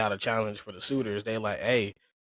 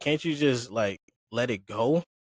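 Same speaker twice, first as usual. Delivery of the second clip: usual speaking voice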